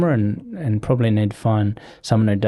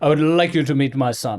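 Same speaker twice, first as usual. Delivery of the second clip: put-on Russian-sounding accent; 2 semitones higher than usual. Retelling what the man massaging them said on waking them, Russian-sounding accent. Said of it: "Sounds Russian".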